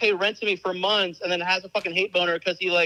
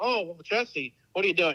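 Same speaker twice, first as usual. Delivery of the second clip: mocking, patronizing, preachy tone; 4 dB quieter than usual. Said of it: "for him to act like".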